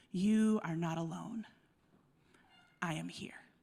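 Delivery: hushed, soft, low half-whisper under the breath. Speaker voicing what Tiny says to those who help others, half-whisper. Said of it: "she whispers".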